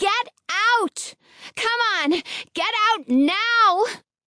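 high, drawn-out, cupped-hands megaphone-style shout. She shouts up to the people at the window to get out; shouting through cupped hands. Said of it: "as a megaphone".

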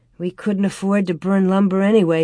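plain

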